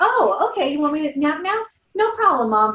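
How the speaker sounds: put-on high-pitched, loud small child's voice. Imagining a child happily agreeing to a parent: imitating little Owen. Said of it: "little Owen is not gonna be like".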